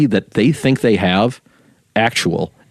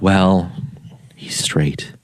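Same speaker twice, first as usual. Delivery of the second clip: low, hushed, confidential murmur; 3 semitones lower, 4 dB quieter than usual. Imitating a parent admitting their son is straight: imitating hushed tones. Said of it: "you say that in hushed tones".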